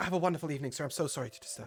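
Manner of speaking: put-on small halfling girl character voice. Voicing a halfling girl apologizing at a guest's door: small halfling girl voice. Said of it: "She sort of bows to you and heads out".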